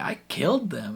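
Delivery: mock tearful, weepy voice. Retelling a scene where Billy breaks down: imitating Billy crying. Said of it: "crying, being like".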